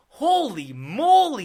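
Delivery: very loud, high exclamation, "moly" drawn out. Retelling a photo shoot, imitating Stan Lee exclaiming. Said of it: "Very, like, nineteen forties, fifties, like, exclamations".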